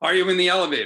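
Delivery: put-on booming German accent. Retelling a man questioning the speaker in an elevator, booming German accent. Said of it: "big booming German accent".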